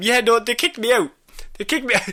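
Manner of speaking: acted, tearful, high, broken-down crying speech. Retelling a cartoon scene where the Trickster breaks down: imitating the Trickster crying.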